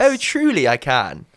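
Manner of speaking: upper-class British accent. Asked to finish the interview in Queen's English: put-on Queen's English accent. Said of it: "Can you speak in".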